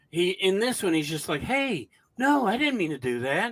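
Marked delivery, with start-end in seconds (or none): 1.4-3.5 gentle, softened, pitched-up delivery. Imitating an actor's line in a movie, soft-spoken voice. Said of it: "he softens his voice".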